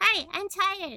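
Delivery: put-on small, high, childlike voice. Asked to do a voice, answering in a little kid voice. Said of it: "Little kid voice".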